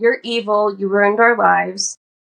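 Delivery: plain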